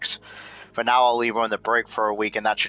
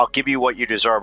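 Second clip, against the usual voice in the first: ordinary talk, nothing marked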